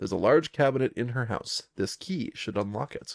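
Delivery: ordinary delivery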